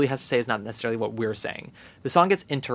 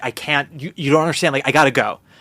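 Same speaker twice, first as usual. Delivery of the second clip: acted panicked voice, louder; 3 semitones higher, 6 dB louder than usual. Retelling a scene where the character freaks out and leaves: imitating someone freaking out. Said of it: "And he freaks out".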